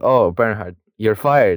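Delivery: normal talking voice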